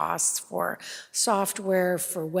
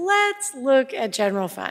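upbeat, cheerful, raised, sing-song voice; 7 semitones higher, 5 dB louder than usual. Presenter switching from a quiet voice to begin on the general fund, happier voice. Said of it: "I can use my happier voice".

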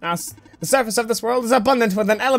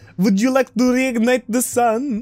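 robot voice with put-on Slavic accent. Speaker testing a possible voice for robots, in a Slavic accent. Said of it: "Do we do like a Slavic accent?".

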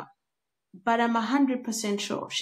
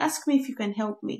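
ordinary delivery

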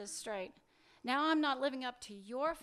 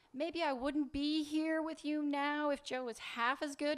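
ordinary delivery

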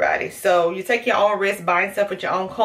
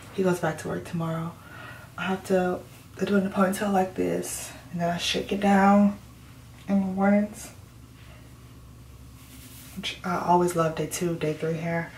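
hushed, whispered speech; 7 dB quieter than usual. Talking while others are still sleeping, whispering. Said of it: "I have to whisper because Micah and them are still sleeping".

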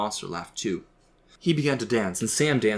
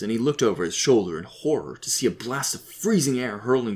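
ordinary delivery

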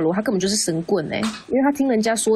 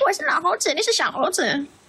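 mock scolding, taunting, much higher; 8 semitones higher than usual. Recounting how a man started scolding the speaker, performing his mock scolding. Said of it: "他就开始骂我".

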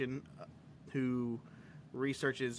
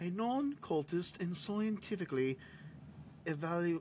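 put-on British accent, much higher; 4 semitones higher than usual. Speaker reading notes about a UFO research organization, in a British accent. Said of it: "it's hard to say in a British accent".

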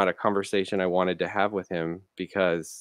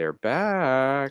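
put-on high, creepy little-girl voice, "back" drawn out; 7 semitones higher than usual. Retelling what a man said in passing, in the creepy little girl voice from Poltergeist. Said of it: "creepy little girl voice from Poltergeist".

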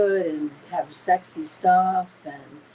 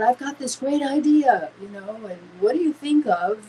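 put-on casual English with a Brazilian accent; 3 semitones higher than usual. Retelling how Gil pitched an idea to the speaker, in Gil's Brazilian accent. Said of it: "in his, you know, Brazilian accent".

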